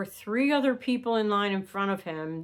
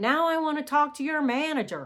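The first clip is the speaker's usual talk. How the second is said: mock, pitched-up, demanding yell; 6 semitones higher than usual. Retelling how an angry customer demanded a manager: imitating a man yelling. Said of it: "starts yelling that he wanted to talk".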